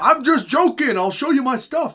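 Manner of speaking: put-on high, loud panicked pleading voice.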